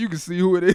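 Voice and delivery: angry cursing rant. Retelling a phone message where a man cussed someone out: imitating someone cussing out angrily. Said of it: "was cussing him out and shit on the line".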